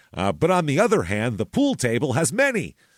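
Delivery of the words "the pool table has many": emphatic, excited, exclamatory inflection. Showing the speaker's habit of ending sentences with exclamation point inflection. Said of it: "That's my exclamation point inflection".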